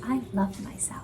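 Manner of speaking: earnest, serious, hushed near-whispered voice. Reading out an affirmation they wrote during a meditation session, serious voice. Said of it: "I have to say it with a serious voice".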